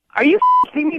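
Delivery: high, loud, outraged, disbelieving cry.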